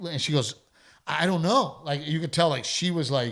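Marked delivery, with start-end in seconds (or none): 1.1-1.8 put-on voice, anxious, edging toward panic. Retelling how a wife answered whether her husband was okay: imitating someone starting to panic. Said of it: "starting to panic".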